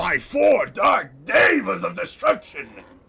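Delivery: loud, rough, raspy, high character shout. Showing how he would voice the character Gundam: Gundam voice. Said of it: "If I did Gundam's voice, he would be something like this".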